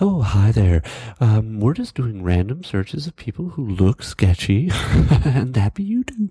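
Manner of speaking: mock overly polite, condescending voice. Retelling how security announced a random search: imitating a very nice but douchey tone. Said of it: "they said it very nicely, but it was still in a sort of, like, douchebaggery way".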